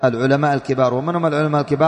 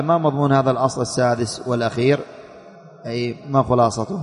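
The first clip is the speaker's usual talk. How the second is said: ordinary delivery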